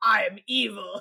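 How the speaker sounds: growling villain impression. Describing a dubbed villain's delivery, growly evil-villain voice. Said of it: "Because it's the growly".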